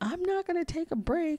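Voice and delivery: mock crying through the words, very high, tearful. Retelling refusing a break while crying: imitating herself crying while talking. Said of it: "I'm crying while I'm saying this to her".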